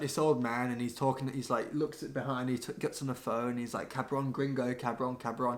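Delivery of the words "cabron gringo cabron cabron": normal talking voice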